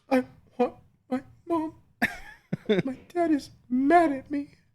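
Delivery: very high, swooping, pathetic crying voice. A dad retelling how his son cried after being yelled at, imitating a child's pathetic sad cry. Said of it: "the pathetic sad cry".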